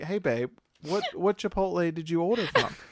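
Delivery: gentle nice voice. Showing how the question about the order should have been asked: nicer way of asking. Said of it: "Do you see the difference".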